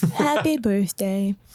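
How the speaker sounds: put-on pet dog character voice. Saying a line in the voice of Pippin the dog, Pippin voice. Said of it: "In the voice of Pippin".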